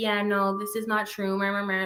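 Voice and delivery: flat, level, droning, dismissive monotone. Imitating Erin going live to deny a stream: mock monotone voice. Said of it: "sits there all monotone".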